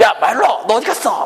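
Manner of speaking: yelling loudly.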